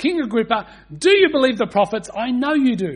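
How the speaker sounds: loud, high-pitched, earnest pleading voice. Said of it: "he's definitely going for an appeal there".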